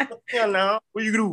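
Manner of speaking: put-on Georgia coastal creole accent. Speaker imitates how their mom and family talk, in a Geechee accent. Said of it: "That's how my mom and them talk".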